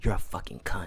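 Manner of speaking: hushed, soft whisper, very close in. Retelling a story where a woman whispers into another's ear, retelling a whisper. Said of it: "she like whispers to in Verity's ear".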